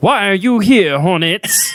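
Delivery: put-on high-pitched old fifties cartoon voice. Asked about the voice, the speaker repeats the line in an old fifties cartoon voice. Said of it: "I kind of picture like an old like fifties cartoon".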